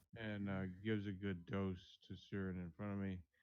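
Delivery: ordinary talk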